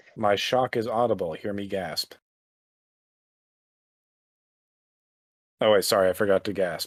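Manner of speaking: mock astonishment, laid on sarcastically. Reacting in character to another speaker's news with sarcasm. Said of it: "I was being sarcastic".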